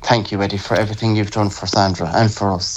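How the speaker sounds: ordinary talk, nothing marked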